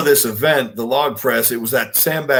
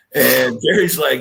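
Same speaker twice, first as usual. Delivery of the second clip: plain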